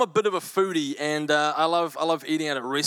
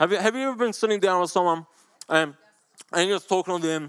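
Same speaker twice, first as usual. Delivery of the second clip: talking with mouth full, chewing, much higher pitch; 3 semitones higher than usual. Demonstrating with biscuits what talking while eating sounds like, mouth full. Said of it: "I've got some biscuits here. This is what it sounds like".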